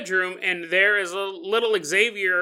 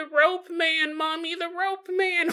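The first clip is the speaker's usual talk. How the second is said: put-on very high, drawn-out, tearful little child voice; 10 semitones higher than usual. Acting out a scared crying preschooler calling to his mother: imitating a crying preschooler. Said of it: "this little crying preschooler going".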